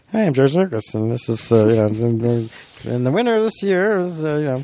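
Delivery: stilted, halting presenter voice with many pauses. Retelling a video announcement of the contest winner: George Lucas impression. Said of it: "That's my Lucas impression".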